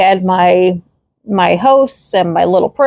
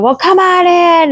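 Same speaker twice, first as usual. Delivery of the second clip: mock very high-pitched, furious yelling; 10 semitones higher than usual. Retelling what a man yelled when she came to his door, imitating angry yelling. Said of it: "he's yelling like really angry".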